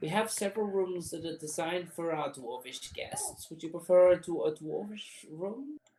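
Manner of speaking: put-on high-pitched old gnome character voice. Working behind the bar, offering a guest a room, in an elderly gnome voice. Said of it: "an elderly gnome working behind the bar".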